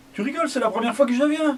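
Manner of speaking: put-on very high, fast, drunken Irish brogue. Retelling what the man replied when told not to come back, irish accent. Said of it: "avec son accent irlandais".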